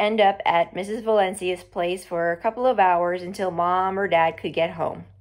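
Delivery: ordinary delivery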